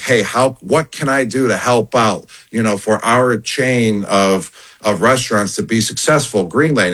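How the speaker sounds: normal talking voice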